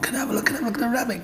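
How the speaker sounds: put-on very high, fast, eager, pleading, begging kid voices.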